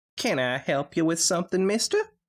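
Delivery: put-on very high little squeak, country accent. Narrating a story, voicing a little filly at the door, squeaky high-pitched country accent. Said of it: "She squeaked, her high-pitched voice not mixing well with the country accent".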